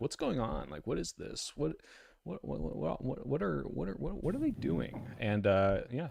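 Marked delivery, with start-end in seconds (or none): 0.0-5.0 high, rough-edged voice, stammering over words. Opening a talk by asking the other speaker questions: Joe Rogan impression. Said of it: "Joe Rogan you and just be like".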